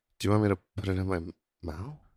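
voice deliberately pushed down low. Showing how the question should be asked, in a low voice. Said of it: "you gotta do it in a low voice".

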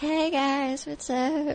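put-on very high-pitched, girly junior-high girl voice. Asked what voice goes with the character, demonstrating the Hot Mary voice. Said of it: "what's the voice you do for that".

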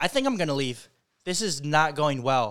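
acted blunt, dead-serious, straight-faced delivery. Retelling a date's sudden remark about leaving: imitating a straight-faced remark. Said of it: "looks at me with the most straight face ever and says".

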